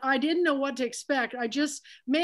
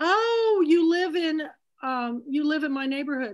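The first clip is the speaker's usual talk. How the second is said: imitated friendly voice; 3 semitones higher, 4 dB louder than usual. Retelling a phone call from a woman: imitating a real friendly voice. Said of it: "real friendly voice".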